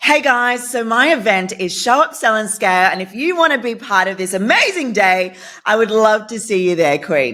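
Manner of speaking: exaggerated, forced, over-the-top fake enthusiasm, pitched high. Demonstrating how an event promo can sound fake, with fake over-the-top enthusiasm. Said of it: "Do you feel how that doesn't sound like myself?".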